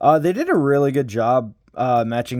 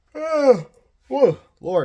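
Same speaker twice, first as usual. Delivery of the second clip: very high voice, words yawned out; 13 semitones higher than usual. Talking about a favorite character from a series, the speaker yawns mid-sentence. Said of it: "sorry for the yawning".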